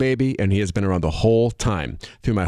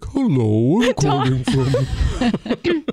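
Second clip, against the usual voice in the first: very slow, drawn-out, swooping phone voice; 3 semitones higher than usual. Mocking how someone sounds on a phone call: imitating Tanya's phone voice. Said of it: "where Tanya's like".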